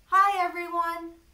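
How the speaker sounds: very loud projected voice. Testing whether the throat vibrates a lot: nice loud voice. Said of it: "in a nice loud voice".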